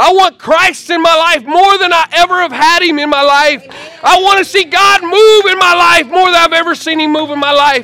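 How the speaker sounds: very high, loud preacher-style shouting. A pastor preaching to his listeners, yelling. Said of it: "I'm not just up here yelling at you".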